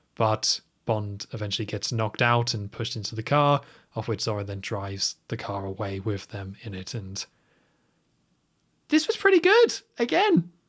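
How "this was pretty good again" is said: very high put-on voice, swooping and rising. Reviewing a Bond film with another speaker, giving a verdict in a high-pitched voice. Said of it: "I have to say that in a high pitched voice".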